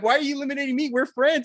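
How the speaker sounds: acted, high, fast angry voice. Retelling a match, acting out Hogan angry at his friend for eliminating him, mock-angry. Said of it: "Hogan gets pissed off".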